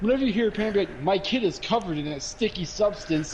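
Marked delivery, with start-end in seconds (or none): none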